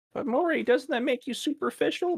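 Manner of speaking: small, very high little character voice. Speaker questioning himself in an imagined voice, in a little high-pitched voice. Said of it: "I did a little high pitched voice".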